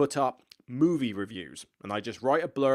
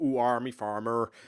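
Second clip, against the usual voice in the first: exaggerated Somerset farmer-style West Country accent. Speaker explains how their Somerset accent gets stereotyped, doing a stereotypical West Country accent. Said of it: "we get the stereotype of".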